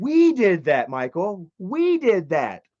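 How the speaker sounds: shocked, slow, stunned disbelief. Repeating what they once said to Michael, retelling a shocked remark. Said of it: "It sounds like there's a shock in my voice".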